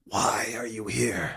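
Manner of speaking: furious, angry whispered voice. Confronting someone who asks to speak to a man, in an angry whisper. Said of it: "an angry whispered voice".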